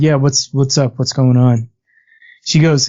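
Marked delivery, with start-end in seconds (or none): none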